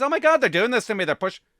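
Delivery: frantic, high, rushed, rattled-off panic. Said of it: "listen to the panic in her voice".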